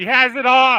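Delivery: very high, loud calling yell. Calling out to someone not in the room: yelling to someone away. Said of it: "I don't know why I'm yelling over there".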